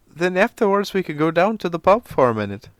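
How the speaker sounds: put-on high-pitched Irish accent. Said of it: "I can't do a fucking Irish accent".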